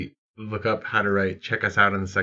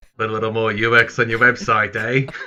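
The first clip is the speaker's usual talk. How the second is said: bad put-on Australian accent; 2 semitones higher, 4 dB louder than usual. Podcast host opening the Drunken UX podcast in a bad fake Australian accent. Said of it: "our bad Australian stuff".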